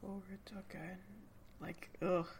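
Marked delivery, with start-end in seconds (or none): 0.0-0.9 sudden drop down to a soft whisper. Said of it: "drops down to a whisper".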